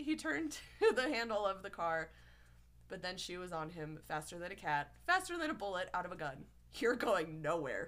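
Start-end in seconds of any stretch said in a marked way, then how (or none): 6.7-7.9 low hiss close into the ear. Reading a story, she catches him at the car door; hissing in his ear. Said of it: "she hissed in his ear".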